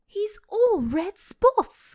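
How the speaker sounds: excited, loud, high exclamation. A boy speaks to Mother, exclaiming. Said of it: "he exclaimed".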